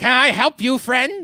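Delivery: high, loud goblin creature voice. Voicing a goblin offering help to a player: goblin voice. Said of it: "The goblin's gonna look up at you and say".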